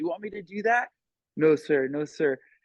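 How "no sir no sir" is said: put-on frightened child voice, very slow, terrified, small. Retelling a kid's scared replies to an angry parent: imitating a terrified kid. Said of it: "he was, like, terrified".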